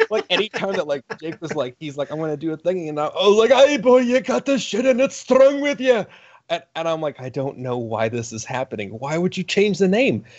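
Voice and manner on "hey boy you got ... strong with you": put-on very high, crazy Scottish accent. Retell what you said when Jake was going to do a thing, in a crazy Scottish groundskeeper voice. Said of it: "crazy Scottish groundskeeper guy".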